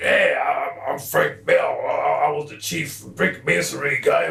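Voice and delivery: gruff, rough-hewn, creaky voice. Retelling a voice first heard at age eleven: loud gruff voice of Frank Bell. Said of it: "loud ass gruff".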